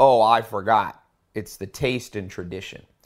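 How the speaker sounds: sarcastic, said loudly.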